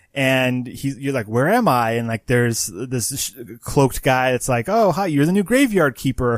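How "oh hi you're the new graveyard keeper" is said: bright, chirpy, pitched-up, cheery exclamatory voice. Describing a video game's opening, voicing a cloaked guy's mock-cheerful greeting. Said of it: "all like happy and exclamation points".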